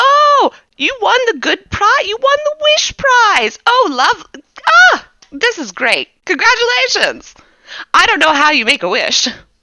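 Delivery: thrilled, very high, loud, excited gush. Voicing a character who wants to clap but can't, very excited. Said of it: "He's very excited though".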